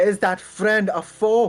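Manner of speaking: calling out, almost shouting. A character with her bow nocked calls out to reach another character, half-shouting. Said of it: "like a little bit shouting almost".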